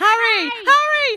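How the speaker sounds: mock shrill, very high, loud scared cry laced with laughter. Act out what you heard amid the noise and whooping, imitating Lindsay's fearful, laughing cry. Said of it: "I can still hear Lindsay going".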